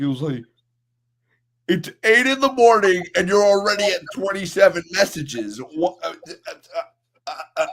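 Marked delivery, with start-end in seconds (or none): 1.7-7.7 put-on stammer, higher and louder. Retelling a co-worker's reaction to many messages: imitating someone stuttering. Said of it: "stuttering like that".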